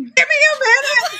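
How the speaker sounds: exasperated, high, wide, laughing near-shout.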